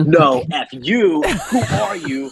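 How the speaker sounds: mock drunk angry shouting. Retelling a loud bar argument, imitating an angry drunk man. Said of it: "he's like angry".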